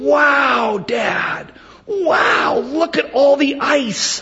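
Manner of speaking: put-on amazed, very high, very slow, drawn-out excitement. A father retells his son's reaction to a food spread, imitating Benjamin's excitement. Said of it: "he gets so excited, he goes".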